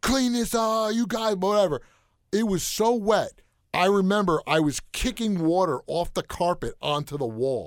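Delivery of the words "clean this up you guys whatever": put-on screaming voice. Recounting a water fight with friends, retelling the counselor screaming at them. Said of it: "started screaming at us".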